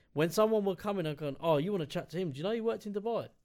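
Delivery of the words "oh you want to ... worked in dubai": put-on bare sarcasm, overly impressed tone. Retelling what they said to people coming to see a coworker, sarcastically. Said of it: "I was just bare sarcastic about it".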